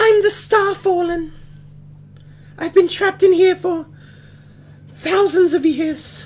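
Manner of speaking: very high, floating, ghostly voice. Game master voices the Starfallen answering a player's question, in a ghostly voice. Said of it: "You hear a ghostly voice".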